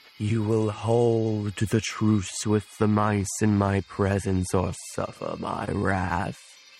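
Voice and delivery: put-on eerie old ghost voice. A character speaking to a cat in newfound animal speech, like an old ghost. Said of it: "So then he'll kind of say in his newfound animal speech, / what started off with a gentle whisper has kind of culminated as his eyes, / I don't know why he sounds like an old ghost all of a sudden".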